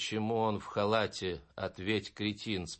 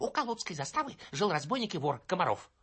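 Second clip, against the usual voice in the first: rushed, raspy, hoarse voice, pitched very high; 9 semitones higher than usual. Narrator reading a boy hurriedly telling the narrator a story, hurried hoarse voice. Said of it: "торопливо рассказывал хриплым голосом".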